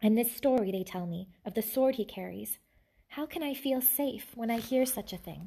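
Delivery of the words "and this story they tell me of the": plain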